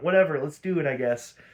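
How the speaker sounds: usual speaking voice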